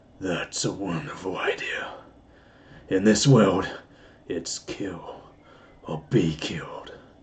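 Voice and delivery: low, very slow, drawn-out evil voice. Trying an evil voice, it comes out a Clint Eastwood-style voice. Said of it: "I can do an evil voice. ... It was more like a Clint Eastwood or something".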